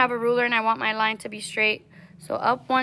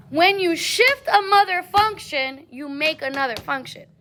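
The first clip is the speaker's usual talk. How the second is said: powerful, proud, forceful delivery; 5 semitones higher than usual. Explaining how shifting a function makes a new one: said with so much power. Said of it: "You said it with so much power".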